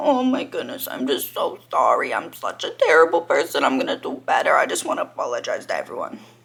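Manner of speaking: over-the-top fake tearful sobbing voice, swooping. Mocking influencers' fake apology videos: mock sob-story apology. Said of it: "make a whole sob story about".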